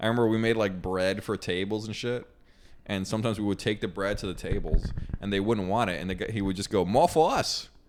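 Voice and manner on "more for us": put-on speaking with Bahamian accent. Retelling a restaurant coworker's line about unwanted bread: imitating a Bahamian coworker's voice. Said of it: "Is that what he sounded like?".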